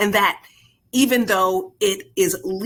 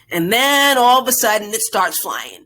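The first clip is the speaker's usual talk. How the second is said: usual speaking voice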